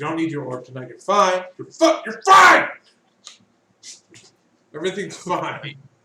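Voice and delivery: sudden, loud, swooping shouted outburst. Telling a player character who lacks its orb that everything's fine: shouting. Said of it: "Why are you shouting?".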